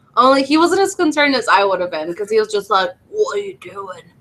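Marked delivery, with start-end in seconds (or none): 3.1-4.0 put-on whispered, breathy, failed Australian accent. Retelling what a character in the game said: bad Australian accent. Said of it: "That is not an Australian asc-".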